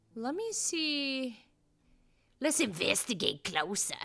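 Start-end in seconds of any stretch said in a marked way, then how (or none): 2.4-4.0 creepy, low put-on voice. While looking for a green gemstone, the speaker says this: creepy voice. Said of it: "that was kind of a creepy voice".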